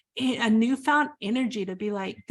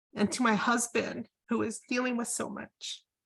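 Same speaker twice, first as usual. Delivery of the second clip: tearful voice, quieter; 5 dB quieter than usual. Telling how a book's stories helped with healing, crying while talking. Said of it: "I'm sorry, I'm crying".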